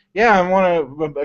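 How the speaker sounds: normal talking voice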